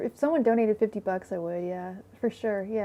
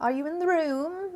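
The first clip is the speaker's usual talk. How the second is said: put-on British accent, pitched up; 7 semitones higher than usual. Showing off the accents they can do, in a British accent. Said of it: "that was British, wasn't it?".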